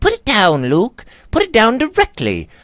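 very high-pitched, loud, terrified cry. Phoebe cries out as luke turns a diamond bracelet in his hands, terrified cry. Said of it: "cried the girl with a look of terror".

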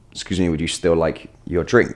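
ordinary talk

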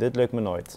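plain

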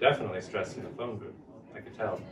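plain reading voice

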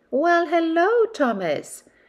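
very high, ringing voice. Narrator reading a character's answer to another's greeting, said with a smile. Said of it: "said Stepney with a smile".

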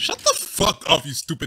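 sudden, furious, angry outburst. While playing a game with others, suddenly triggered. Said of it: "got triggered out of nowhere".

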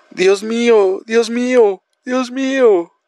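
yelling out. Narrator reads a character crying out after leeches are found: shouting. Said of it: "gritaba Bern".

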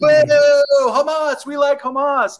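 acted, carefree, very high yelling with drawn-out boo. Retelling what a man shouted at them on a walk, imitating someone yelling. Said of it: "Just like yelling".

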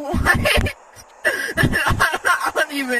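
giggling through the words, high and very slow. Chatting with friends during a game, laughing while talking. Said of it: "I don't know why I'm laughing".

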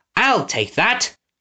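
high-pitched snapping through clenched, gritted teeth. Narrator reads a lord grabbing for a hat on the stairs, snapped through gritted teeth. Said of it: "snapped through gritted teeth".

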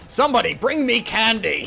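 loud, very slow, dragged-out shout. Describing a woman who shouts whatever she wants, the speaker imitates someone shouting. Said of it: "she's just shouting shit that she wants".

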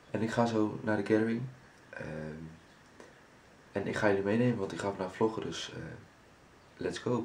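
speaking quietly. Vlogger recording early while others sleep next door, talking softly. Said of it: "ik moet een beetje zachtjes praten".

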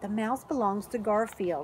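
plain reading voice

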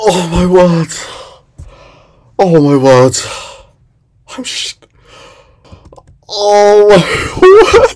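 shaken, high, swooping frightened cries of relief. Reacting to nearly dying in a game: shaken and scared. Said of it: "I'm shaking".

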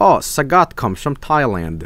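ordinary delivery

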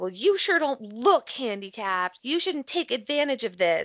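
man shouting reproachfully. Recounting a stranger yelling at them, the speaker imitates the man yelling. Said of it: "he yells again at me".

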